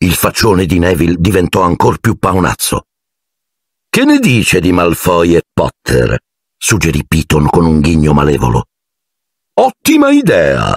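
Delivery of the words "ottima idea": very high-pitched, eager, ringing exclamation. Narrator reading Lockhart's reply to Snape's suggestion, exclaiming. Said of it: "esclamò Lockhart".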